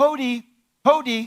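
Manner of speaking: shrill, very loud, high-pitched calling yell. Explaining how visitors announced themselves at a hut with no door, yelling. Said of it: "you would yell".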